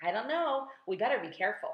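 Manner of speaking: plain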